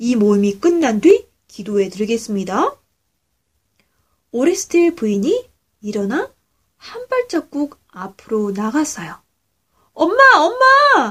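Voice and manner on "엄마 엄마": shrill terrified scream, very high. Narrator reads Tipam calling out as Mother steps forward, shouting in terror. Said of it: "공포에 질려 소리쳐 불렀어요".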